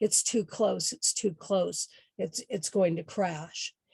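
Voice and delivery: ordinary talk, nothing marked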